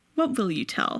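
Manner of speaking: put-on, very threatening, menacing tone. Retelling a film scene where he questions her: imitating a very threatening tone. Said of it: "he gets, like, very threatening".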